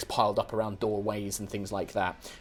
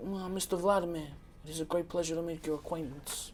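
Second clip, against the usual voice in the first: higher, polite, hawk-eyed broker voice. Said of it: "he's like".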